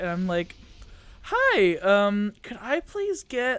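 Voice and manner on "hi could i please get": voice jumping up an octave or two, high, swooping. Retelling ordering at a drive-through window, voice going up an octave. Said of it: "my voice goes up like an extra octave or two higher".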